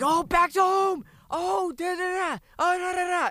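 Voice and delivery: super excited, very high, loud, belted Japanese announcer voice.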